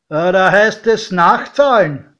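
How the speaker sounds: called out loudly. A doorman takes paper scraps from passengers leaving the train and calls out.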